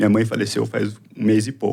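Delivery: voice catching, choking up, on the verge of crying. Answering an interviewer's question about sport, on the verge of tears. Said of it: "Eu vou chorar".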